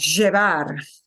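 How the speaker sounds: llevar pronounced with porteño Spanish accent. Showing how someone from Buenos Aires pronounces the verb: Buenos Aires accent on llevar. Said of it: "somebody from Buenos Aires is going to pronounce that verb as llevar".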